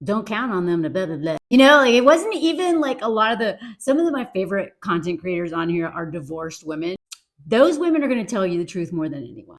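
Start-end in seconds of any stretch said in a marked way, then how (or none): 0.0-1.4 put-on muttering, lower and quieter. Retelling a mom's bitter remarks about men: imitating muttering under breath. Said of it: "under her breath remarks".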